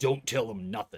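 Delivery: put-on orc accent. Voicing a Kenku creature that makes a sound: really deep orcish accent. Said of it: "a really deep with like a orcish accent".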